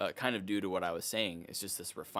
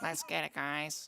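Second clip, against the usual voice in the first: tiny mocking voice, higher; 7 semitones higher than usual. Imitating someone mid-story for the other speaker, in a little put-on voice. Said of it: "love that little voice you're doing".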